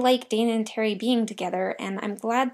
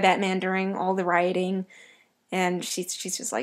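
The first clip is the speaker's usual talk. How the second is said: normal talking voice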